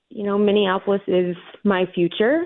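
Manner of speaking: ordinary delivery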